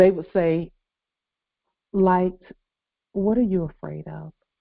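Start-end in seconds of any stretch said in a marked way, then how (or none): 1.9-4.3 imitated very calm voice. Retelling what the ancestors would say to a frightened speaker: imitating the calmest voice. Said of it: "the calmest voice".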